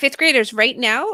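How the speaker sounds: put-on teacher voice. Demonstrating a classroom voice for fifth graders: voice raised an octave. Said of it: "do you hear how it's higher?".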